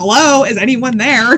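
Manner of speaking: exasperated, frustrated calling out. Retelling calling out after hearing a woman's voice answer hello, retelling frustrated calling out. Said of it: "I'm getting all frustrated".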